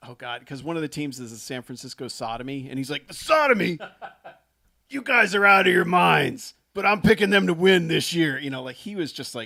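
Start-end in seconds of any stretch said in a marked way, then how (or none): 3.1-8.4 very loud, pitched-up ringside announcer hype. Retelling Jeff Garcia's fantasy draft bit in his football-and-wrestling announcer voice. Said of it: "like a cross between like a football announcer and a W W".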